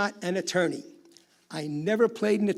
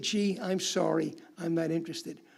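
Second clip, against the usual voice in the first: mock meek tone, quieter; 5 dB quieter than usual. Imitating seniors who decline a scam pitch: imitating a meek reply. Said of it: "meekly say".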